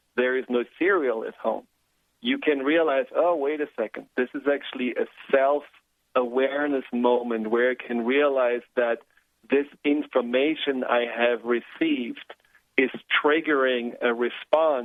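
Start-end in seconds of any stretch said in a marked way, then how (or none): none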